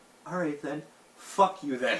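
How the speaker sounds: put-on, sudden, snapped angry outburst. Retelling giving up on acting normal in a chat: retelling snapping angrily. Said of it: "and I just snapped".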